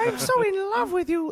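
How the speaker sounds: very high put-on puppet-style voice. Taking turns doing character voices: Miss Piggy voice. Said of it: "That's my attempt at a Miss Piggy".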